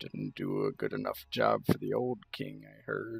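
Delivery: grumbled, muttered under the breath. Voicing a character who mocks a guard behind his back: muttering under his breath. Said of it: "kinda says under his breath".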